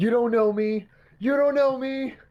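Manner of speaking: loud, high-pitched, repeated hollering yell. As people walk away from the crowd, Adrian is out there yelling. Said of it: "you see Adrian out there yelling like".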